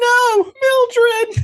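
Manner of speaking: shrill, very high, loud scream. Retelling a character's scream while his head is pushed under water: imitating high-pitched screams. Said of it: "the high-pitched screams while this is happening of him go".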